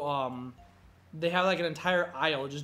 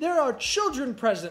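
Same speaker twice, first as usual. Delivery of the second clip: put-on furious indignant outburst, shrill and very high; 10 semitones higher, 5 dB louder than usual. Retelling the same woman's complaint: imitating an angry woman. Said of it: "she got so mad".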